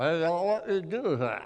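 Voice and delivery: backwoods drawl while chewing. Retelling a delivery truck driver at a worksite, doing his deep woods drawl with chew. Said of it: "with a deep woods drawl, complete with chew packed into his cheek".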